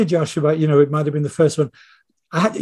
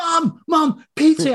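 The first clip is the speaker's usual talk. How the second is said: put-on scream, pitched higher; 12 semitones higher than usual. Retelling how a son screamed at his interrupting mother: imitating Tony screaming. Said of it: "he'd be screaming".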